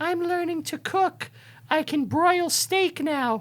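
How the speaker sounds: high-pitched, breathy put-on starlet voice.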